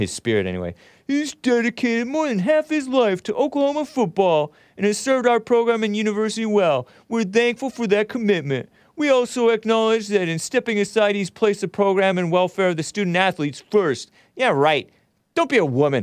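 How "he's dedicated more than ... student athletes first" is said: reading aloud, higher pitch, mocking tone. Reading a coach's released statement aloud: mocking read of Brent Venables. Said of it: "I'm gonna mockingly read his".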